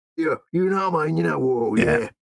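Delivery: put-on Cockney-accented orc voice. Showing what orcs sound like in audiobooks, cockney orc voice. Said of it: "They get a Cockney type to do it".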